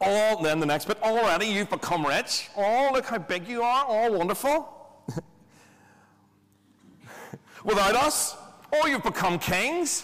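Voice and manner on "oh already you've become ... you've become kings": scornful, high, sneering sarcastic put-on voice. Acting out his sarcasm toward them: mimicking a mocking sarcastic voice. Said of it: "I'm sure he would do that voice".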